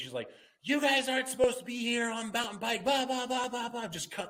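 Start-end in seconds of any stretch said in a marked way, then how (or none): 0.6-3.9 shrill, very high-pitched, yapping, scolding yell. Retelling what a rider said on the trail: imitating someone yelling. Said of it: "yelling at me".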